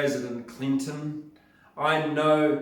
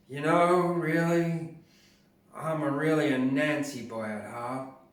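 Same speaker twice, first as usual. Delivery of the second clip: put-on Southern accent, put on. Telling a story in which President Clinton speaks: President Clinton southern accent. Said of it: "he said in his southern accent".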